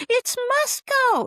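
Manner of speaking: very high, loud, excited yell.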